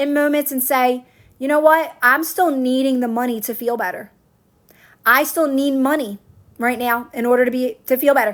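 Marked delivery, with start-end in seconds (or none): none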